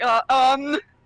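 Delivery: mocking uh, um sounds. Mocking another player for saying um: mocking someone's um. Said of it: "I'm mocking him for saying".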